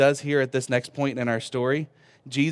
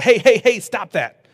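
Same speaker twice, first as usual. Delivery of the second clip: playful laughing, higher, louder, slower; 8 semitones higher, 8 dB louder than usual. A dad showing how he tells his kids to stop, playful laughing. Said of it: "you'll laugh and say".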